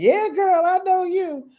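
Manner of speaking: squeaky, very high doggy voice. Voicing the puppy who is looking and laughing: voicing Mystic the dog laughing. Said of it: "Look like she's laughing like".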